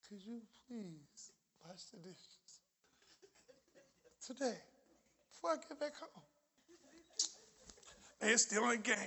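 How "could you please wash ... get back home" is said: breathy, hushed, sweet-talking voice, near a whisper. Showing the crowd how to ask kids to wash the dishes, sweet voice. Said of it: "Go ahead and try to talk some sweet voice".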